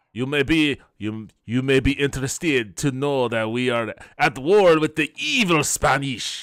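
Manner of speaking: loud, put-on, approximate French accent. Voicing the governor who welcomes Mister Rex, in an attempted French accent. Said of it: "I'm doing the French accent".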